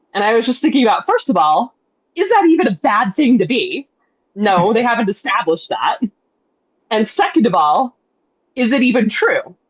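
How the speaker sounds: normal talking voice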